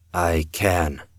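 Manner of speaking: speaking low. A man answers a woman asking him to reassure another, his voice low. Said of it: "his voice low".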